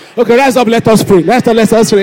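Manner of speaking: very loud, playful, joking teasing call. Joking with the audience before telling a story, teasing. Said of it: "I'm teasing you".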